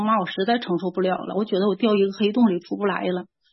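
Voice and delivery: ordinary talk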